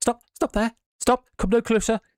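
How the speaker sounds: relatively high man's voice, pitched very high. Narrator reading a voice calling out in pitch blackness, in a high-pitched male voice. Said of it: "a relatively high pitched male voice saying".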